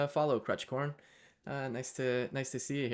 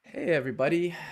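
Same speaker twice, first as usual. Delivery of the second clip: loud voice that cracks partway through; 4 semitones higher, 6 dB louder than usual. A host greeting viewers at the start of his show, voice cracking. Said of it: "my voice just cracked there".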